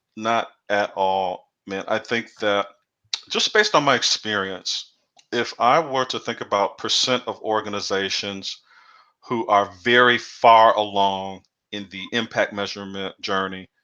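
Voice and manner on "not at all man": ordinary talk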